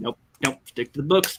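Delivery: hushed, breathy, whispered businessman character voice. Voicing a businessman character scolding about game spending: businessman character voice. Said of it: "Jeffrey, the businessman".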